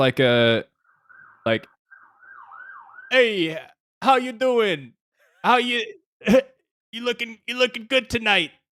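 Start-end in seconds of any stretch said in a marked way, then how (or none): 3.1-8.5 put-on New Jersey accent, voice lifted way up. Taking his turn after the others in a bit: New Jersey accent. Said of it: "The the Jersey accent would just take take me away".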